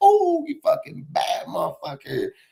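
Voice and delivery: very high, swooping, mocking jeer. Retelling a movie scene where the coach mocks a ball hog: imitating someone mocking a player. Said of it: "starts clowning this dude".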